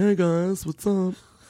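high, slow, drawn-out robot voice.

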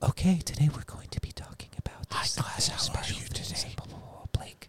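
soft ASMR-style whisper. Showing what whispering in an ASMR fashion sounds like: ASMR-style whisper. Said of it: "when one whispers into, in an A S M R fashion".

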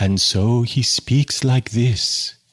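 creepy, morbid, slightly charming gothic voice. Showing how a New York performance artist speaks, do a creepy, morbid Edgar Oliver voice. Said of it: "he speaks like a character from an Edward Gorey story".

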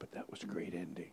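soft whisper. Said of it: "why I'm whispering".

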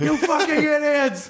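mock screaming, high and slow.

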